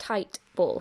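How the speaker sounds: ordinary delivery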